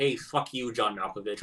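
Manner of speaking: plain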